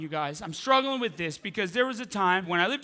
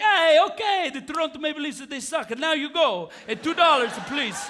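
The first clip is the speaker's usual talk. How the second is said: put-on old Italian man voice, pitched higher; 6 semitones higher than usual. Retelling what the barber says as you sit down: imitating old Italian barber. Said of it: "And he's like".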